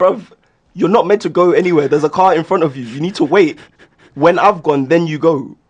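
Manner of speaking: angry shouting. Recounting a car crash, re-enacting shouting at the other driver: retelling an angry shout. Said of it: "the way I was yelling at the guy".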